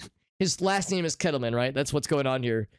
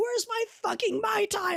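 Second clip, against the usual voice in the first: put-on very high, surly, drunk-sounding old-lady cat voice. Voicing a cat's invented persona when it is given attention, surly old woman cat voice. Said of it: "surly little like old woman cat".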